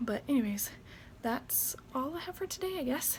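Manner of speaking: winded, short of breath. Signing off to viewers at the end of the video: out of breath. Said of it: "I'm already out of breath too".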